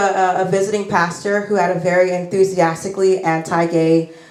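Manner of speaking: normal talking voice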